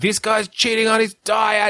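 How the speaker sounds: very high tattletale yell in a gadget voice. Acting out a diet-tracking gadget that shouts at its user: mock yelling as a fitness device. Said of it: "it gets louder and louder".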